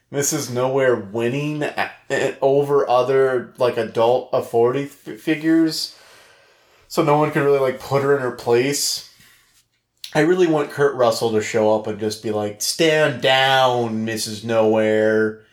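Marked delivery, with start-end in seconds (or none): 12.6-15.3 slow drawl with "down" stretched out and leaned on. Imagining an actor stepping in to stop a character: Kurt Russell voice. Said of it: "in his Kurt Russell voice".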